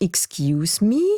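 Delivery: English, spoken in a changed timbre.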